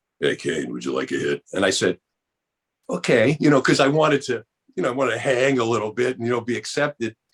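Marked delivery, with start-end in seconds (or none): 0.2-1.4 very deep, very low-pitched voice. Retelling what a man said to him, imitating his very low voice. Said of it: "He's got a very low voice".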